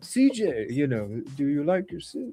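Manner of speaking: attempted Polish accent. Retelling what a person asked at a meal, attempted polish accent. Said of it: "I cannot even try to copy a Polish accent".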